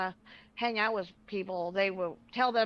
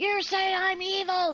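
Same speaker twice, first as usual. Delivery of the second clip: put-on scream, higher; 10 semitones higher, 4 dB louder than usual. Retelling an argument where she started screaming: imitating someone screaming. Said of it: "She started screaming".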